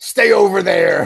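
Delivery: very loud, rough, growling warrior-style battle yell. Telling a yo-mama joke, acting out the game fighter's line: Scorpion yell. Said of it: "Scorpion yells".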